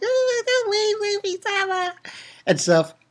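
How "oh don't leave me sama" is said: put-on crying, much higher and quieter. Retelling a story scene as Shirahoshi: imitating Shirahoshi crying. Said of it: "she's crying".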